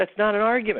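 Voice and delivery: play-acted, shrill, very high-pitched scream. Retelling a reaction to a television interview: imitating own screaming. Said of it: "I was screaming at the television going".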